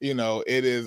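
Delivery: ordinary delivery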